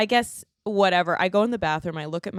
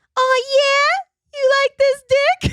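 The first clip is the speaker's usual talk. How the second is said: shrill, very high, loud squeaky squeal; 9 dB louder than usual. Telling others about a man who talked during sex, imitating a really high-pitched voice. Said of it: "he has this really high pitched voice".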